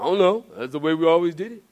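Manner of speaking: classic cartoon bear character voice. Acting out a churchgoer who can't explain the church's habits: Yogi Bear voice. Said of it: "That sounds like Yogi Bear".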